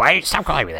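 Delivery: high, angry, dog-like cartoon voice. Imitating the other speaker complaining about being called dad: dog-like voice. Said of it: "Is that what I sound like?".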